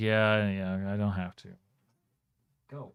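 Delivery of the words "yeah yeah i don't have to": put-on cat voice, sleepy and determined. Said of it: "He's like".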